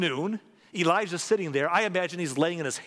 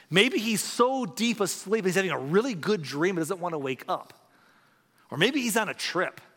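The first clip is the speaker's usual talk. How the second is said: ordinary talk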